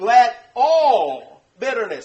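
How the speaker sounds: ALL stretched, loud and wide.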